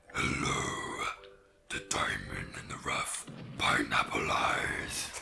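slow-speaking, living cave monster voice. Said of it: "a very good Cave of Wonders voice".

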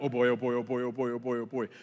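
freaking-out panic, looping the same words. Retelling a skydive fall, imitating past panic, freaking out. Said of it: "you can tell I'm freaking out 'cause I'm like".

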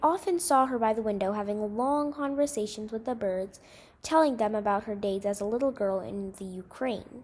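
ordinary delivery

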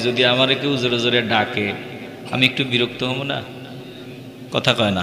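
quiet, hushed voice.

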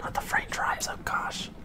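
soft, quiet whisper. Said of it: "I don't know why I'm whispering".

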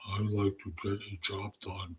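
flat, quiet, dull, affectless, low-energy delivery. Giving an example of the answer they are not looking for, flat affect. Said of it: "they're not looking for flat affect".

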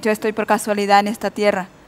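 ordinary talk

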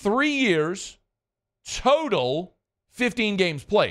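measured, unhurried, slow, deliberate delivery. Discussing a player's games-played record, repeating a point: saying it again slowly. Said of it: "Let me say that again slowly".

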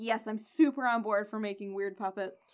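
plain

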